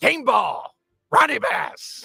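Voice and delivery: drawn-out raspy delivery. Quoting a favorite movie line after being urged to: Denzel Washington impression. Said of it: "it's a great impression there you got".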